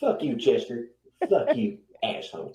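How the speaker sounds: put-on angry, low, cantankerous grumpy old man voice. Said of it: "he sounds like that fucking old man".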